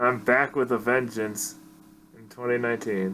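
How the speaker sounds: dry, flat deadpan delivery. A podcast guest answers the host's greeting, deadpan. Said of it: "supposed to be like intense. just like deadpan".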